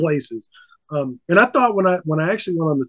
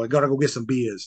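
mocking put-on Boston accent, quieter; 3 semitones lower, 5 dB quieter than usual. Telling a travel story, mimicking the locals in a boston accent. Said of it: "I hate the Boston accent".

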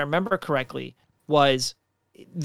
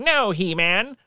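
cartoon gangster voice with a twang; 4 semitones higher than usual. Showing how a cartoon villain's lines always sounded: Skeletor voice. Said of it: "that's basically how Skeletor talked".

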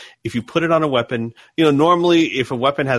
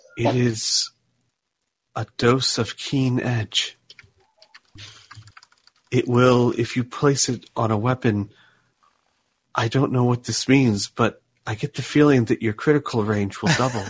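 gentle character voice. Narrating to a player, Zellera speaks in their head: Zellera's soft voice. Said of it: "You hear a soft voice in your head".

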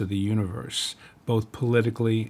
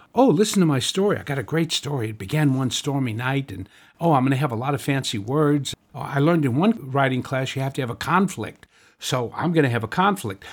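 put-on chatty storyteller voice, higher; 3 semitones higher than usual. Mocking how writers tell stories: imitating a chit-chatty writer voice. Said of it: "a voice that's very chit-chatty".

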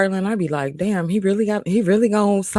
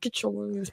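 put-on gritted-teeth scolding voice, quieter; 13 dB quieter than usual. Acting out a mother scolding a child in a store: mock scolding through clenched teeth. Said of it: "talk to me through clenched teeth".

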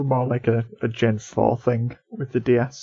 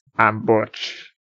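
put-on villain character voice. Discussing a Pokémon character's name, the speaker does a Butch impression. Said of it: "that's my Butch impression".

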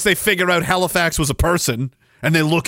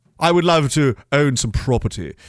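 plain

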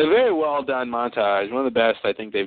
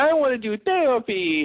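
put-on very high, tiny baby voice; 12 semitones higher than usual. Retelling how a TV character regressed to a child: Tracy's baby voice.

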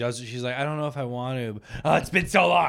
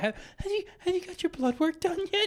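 put-on tearful voice, much higher, quieter, slower; 5 dB quieter than usual. Retelling a woman who keeps urging him to get blood work, imitating her about to cry. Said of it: "she sounds like she's gonna cry".

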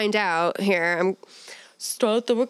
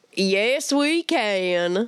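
southern accent with the word "can" drawn out. Taking a turn at doing voices, saying the line in a Southern voice. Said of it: "I'm going to do a Southern voice too".

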